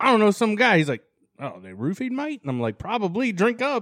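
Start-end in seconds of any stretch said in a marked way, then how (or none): 1.4-2.4 badly put-on, horrible fake Australian accent. Retelling his former Australian boss's question, in a horrible Australian accent. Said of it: "I'm doing a horrible Australian accent".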